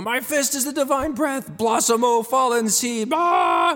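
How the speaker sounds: very high, drawn-out, acted-out shriek. Retelling recording voice lines alone in the basement: retelling a screamed battle line. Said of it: "and I'm screaming".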